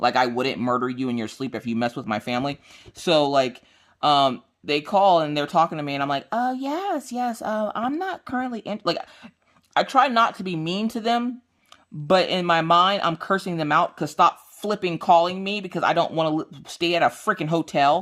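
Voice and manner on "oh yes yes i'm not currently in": sweet customer service voice, pitched way up, slow. Speaker acts out answering unwanted callers: put-on pleasant customer service voice. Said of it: "this weird customer service voice that's all pleasant and nice".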